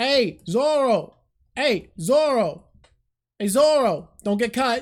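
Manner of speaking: very slow, drawn-out New York Italian accent. Showing the voice planned for Luffy in an abridged series: New York Italian Luffy voice. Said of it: "New York Italian Luffy".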